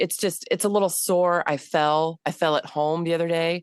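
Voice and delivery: ordinary talk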